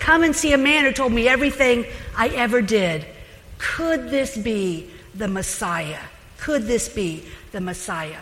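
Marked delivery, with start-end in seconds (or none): none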